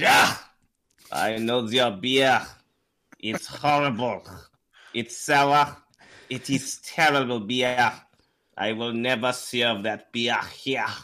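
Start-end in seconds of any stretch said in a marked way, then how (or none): 1.1-10.9 put-on German restaurant owner accent. An actor, urged by the others, plays a German restaurant owner in a German accent. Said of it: "Let's hear your German".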